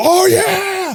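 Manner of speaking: very high, whooping, shrieked victory scream. Retelling how players celebrated winning round one: imitating people screaming. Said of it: "the people that were screaming".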